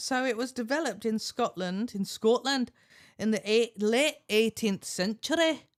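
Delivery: loud, put-on attempted Scottish accent. Giving an answer, in a Scottish accent. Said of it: "Good Scot- Scottish accent".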